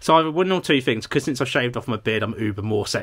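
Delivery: ordinary delivery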